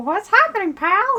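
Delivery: weird little squeaky cartoon mouse voice. Doing a voice while joking with another speaker, Mickey Mouse voice. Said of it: "That was actually pretty good, Mickey Mouse".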